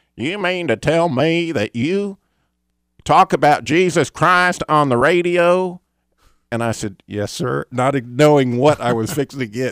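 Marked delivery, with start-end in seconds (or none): 0.2-5.8 loud, high Texas-sounding man's voice. Retelling a phone call in Fort Worth, speaker quotes the man with a Texas accent. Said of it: "Texas sounding guy".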